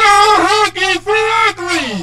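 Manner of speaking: creature's jeering cry, kept contained. Acting out a toy monster's line in a yo mama joke: Huggy Wuggy screaming. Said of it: "Huggy Wuggy screamed".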